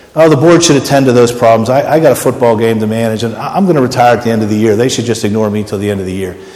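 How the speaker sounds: normal talking voice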